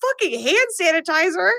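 mock furious, pained scream, high and shrieking. Retelling a movie fight scene where a character gets hit: imitating a character screaming. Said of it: "and Amber screams".

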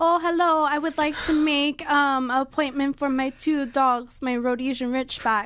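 put-on, fake French accent. Retelling how a man phoned the speaker's work, in a fake French accent. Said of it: "using a fake french accent and he was like".

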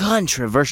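dramatic pause, then controversial with dramatic build-up.

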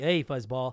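put-on sarcastic tone. Imitating a sarcastic game salesman greeting the player: imitating sarcastic salesman. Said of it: "that sarcastic guy".

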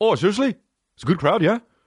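put-on Irish accent, pitched high. Acting out a friend's reply about a show: imitating Mark. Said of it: "Mark is my Irish buddy".

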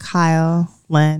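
put-on sexy voice. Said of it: "sexy voice".

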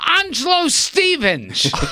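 put-on excited, eager, kid-like scream, very high, swooping. Retelling shouting out an answer as a little kid: imitating an excited scream. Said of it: "I scream out excitedly".

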